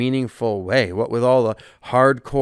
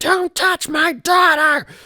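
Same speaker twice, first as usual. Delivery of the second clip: very high, shrill shriek at the top of lungs; 4 dB louder than usual. Retelling how a mother screamed at the speaker: imitating a mother screaming. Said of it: "starts screaming over and over again".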